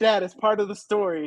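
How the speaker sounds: plain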